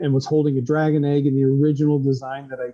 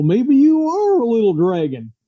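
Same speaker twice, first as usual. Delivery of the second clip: put-on really goofy Southern accent, high, swooping; 8 semitones higher, 4 dB louder than usual. Retelling how a coworker voiced Hunter: imitating Ted's goofy Southern accent. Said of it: "he did this really goofy Southern accent".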